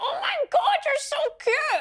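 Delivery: very high gushing squeal. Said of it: "and I was just like".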